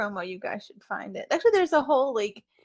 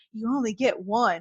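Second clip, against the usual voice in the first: stern put-on dad voice. Retelling what Jay said while pointing at the posters: imitating Jay's stern daddy voice. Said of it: "It was his daddy voice".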